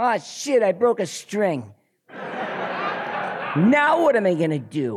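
very high, complaining, whiny nasal voice. Recalling how they sounded at twenty-five in a band, imitating a whiny, nasal voice. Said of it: "all whiny and nasally and complainy".

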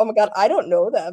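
ordinary talk

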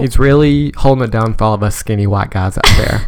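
ordinary delivery

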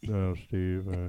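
put-on laid-back drawl. Imitating a voicemail from Matthew McConaughey, like his Lincoln commercials: Matthew McConaughey voice. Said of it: "talking like he does in those Lincoln commercials".

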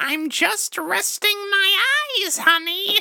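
eerie, spooky witch voice, very high. Speaker quotes his grandma's answer when asked why she was sleepy: spooky witch voice. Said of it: "She sounded like a spooky witch?".

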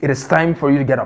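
muttered, under the breath. Leading the congregation in repeating a phrase, saying it under the breath. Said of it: "Just say under your breath".

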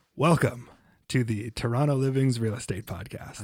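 put-on smooth radio announcer voice. Opening the podcast with a welcome in a smooth radio announcer voice. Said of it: "my radio voice is on".

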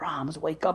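hushed whisper. Retelling how the mother whispers to wake him up: whispering. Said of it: "she's whispering".

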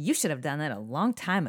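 loud, play-acted, very sassy voice. Retelling a remark made while watching a movie, imitating Rudy's sassy voice. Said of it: "Rudy said in the most sassy voice".

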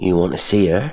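ordinary delivery

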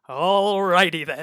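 goofy comic delivery, belted out high and very loud. Describing a trailer, the speaker quotes the man who turns around: Ace Ventura impression. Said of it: "so he Ace Ventura is it?".

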